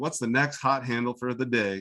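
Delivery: ordinary talk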